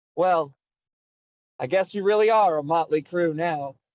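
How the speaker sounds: chuckling throughout the words. Narrator voices a character addressing the group before the next adventure, chuckling while speaking. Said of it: "he chuckles, and he says".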